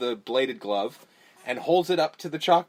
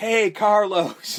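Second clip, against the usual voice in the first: mock, high, screamed call; 7 semitones higher, 4 dB louder than usual. Retelling a game scene, the speaker acts out Freddy Krueger calling Carlos, imitating Freddy Krueger screaming. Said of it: "screaming like".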